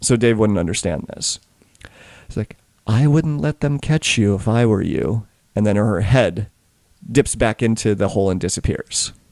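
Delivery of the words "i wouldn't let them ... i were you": put-on little girl character voice, slower. Narrating a tabletop game, a little girl speaks down to the players, voicing a little girl dragonborn. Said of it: "this little girl dragonborn, she says".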